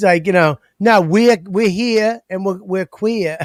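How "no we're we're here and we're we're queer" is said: shoddy, bad put-on New York accent. Mocking how a rock band talks: shitty New York accent. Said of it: "their shitty New York accents".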